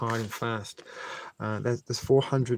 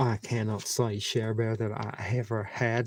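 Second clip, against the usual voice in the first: put-on, stock, generic Southern accent. Speaker chatting to a listener in a put-on voice: generic southern accent. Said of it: "This is just my generic Southern accent".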